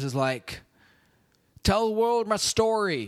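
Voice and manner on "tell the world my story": very high voice with slight Southern twang. Retelling a movie scene between Ed Harris and Nick Cage: Ed Harris impression. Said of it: "my Ed Harris impression".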